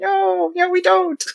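tiny, squeaky, very high, slow chorus of bug voices. Voicing bed bugs denying they are there: bunch of little voices. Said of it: "a bunch of little voices being like".

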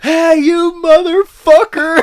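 very high, shrill, very loud screaming. Retelling a friend screaming out a car window: retelling a friend screaming. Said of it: "He's screaming shit out the window".

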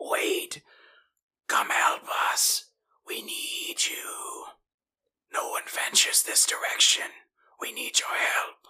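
loud, breathy, projected whispered shout. Voicing stuck humanoids calling the players over: shout-whispering. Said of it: "begin to kinda shout, whisper in your general direction".

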